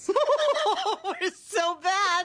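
put-on wicked, laughing voice. Recapping a scene and acting out Lucille's line, imitating Lucille's wicked laugh. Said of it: "she starts doing that kind of wicked laugh".

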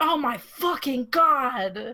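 very slow, high, stretched-out scream. Recalling a man on stage who dropped everything: retelling a scream. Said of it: "then just screamed".

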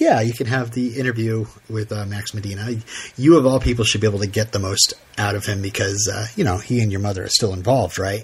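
ordinary talk

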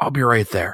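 hushed whispering voice. Voicing a character who answers a call for help: whispering. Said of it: "and she kinda whispers".

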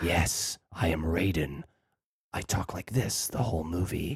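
very quiet, low, breathy whisper-talk. Mocking a movie's casting, speaker does a whispery Raiden impression. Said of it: "I whisper talk".

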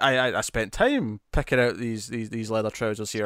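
plain

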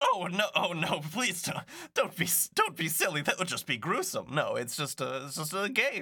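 villainous game-host style character voice. As game master, answering a player who asks if they are murdering each other, Riddler voice. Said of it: "This [name] here knows that I am typically a master of riddles, but [name] to my left here has taught me the beauty and the intricacies of games. So today I am taking on a different mantle. Instead of".

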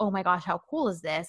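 mock-excited gushing. Retelling a woman's first reaction on hearing the story, imitating excited gushing. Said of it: "she gets all excited at first".

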